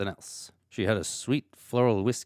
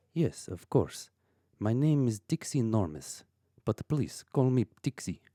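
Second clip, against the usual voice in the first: put-on Russian accent, played in character. Voicing a maid answering a detective's questions: Russian accent. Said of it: "That's a lovely accent you have. Russian?".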